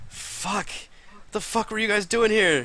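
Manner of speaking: aghast, horror-stricken disbelief, voice very high. The speaker voices Crank reacting to what happened: Crank, horror-stricken. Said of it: "Crank looks just completely like horror stricken".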